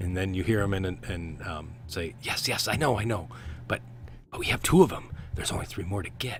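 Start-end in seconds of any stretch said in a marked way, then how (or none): 2.2-6.4 own normal voice, back-and-forth arguing tone. Voicing a character talking back and forth to himself: talking back and forth to himself. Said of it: "And it's his same voice".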